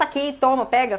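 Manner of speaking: ordinary talk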